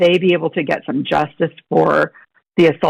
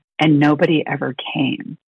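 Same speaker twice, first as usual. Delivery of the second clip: put-on very quiet, hushed voice. Retelling a teacher's words on a task force call: imitating a very quiet voice. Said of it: "in this very quiet voice".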